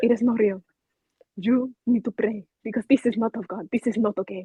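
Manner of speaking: put-on Spanish-accented, broken-English grandma voice. Retelling what her grandmother told her, imitating grandma's broken English.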